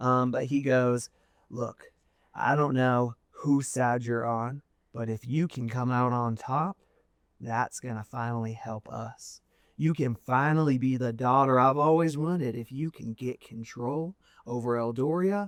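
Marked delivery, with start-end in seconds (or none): 1.5-15.5 hushed whisper, lower pitch. A father speaks to his daughter amid a battle, in a hushed whisper. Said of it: "a hushed whisper tone".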